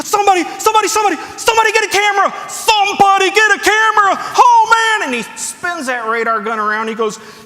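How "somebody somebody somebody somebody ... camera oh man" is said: thrilled, excited shouting at a very high pitch. Telling a story, acting out a man thrilled by a radar reading; imitating excited shouting. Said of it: "he's jumping around, and he's all excited".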